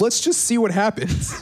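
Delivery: high, carefree, breezy put-on voice. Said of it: "we were like".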